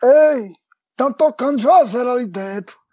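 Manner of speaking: put-on hoarse elderly man's voice. Retelling what an old man said at a chapel door: imitating an old man's hoarse voice. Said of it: "com a voz meio rouca assim".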